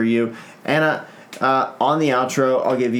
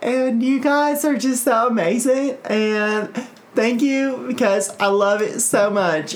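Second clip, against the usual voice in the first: put-on girly voice, pitched way up; 10 semitones higher than usual. Asked to say something in a girl voice, speaker does a girl voice. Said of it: "The only voice I want you to do is the girl voice".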